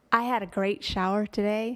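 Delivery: loud, trying-hard put-on American accent. Asked to try an American accent on a given line: put-on American accent. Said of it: "Okay, but then I've done my American accent".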